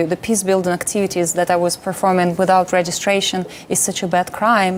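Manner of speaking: ordinary talk, nothing marked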